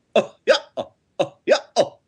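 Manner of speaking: very high-pitched, machine-like laugh. Describing how a translated version broke the laugh into parts: robotic Goofy laugh. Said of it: "it sounded very robotic and strange".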